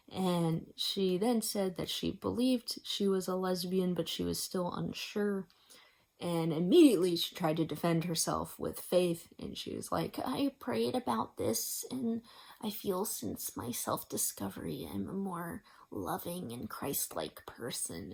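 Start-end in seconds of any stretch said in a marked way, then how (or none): 10.2-18.1 soft, sing-song, teasing, mocking girly voice. Quoting a woman who came out to the speaker, in a mocking girly voice. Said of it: "saying that in a voice as if I'm making fun of her".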